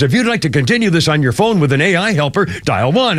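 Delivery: plain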